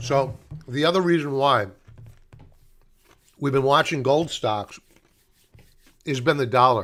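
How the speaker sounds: speaking with mouth full of ice. Addressing folks after apologizing for chewing ice, talking while chewing ice. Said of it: "I'm chewing ice".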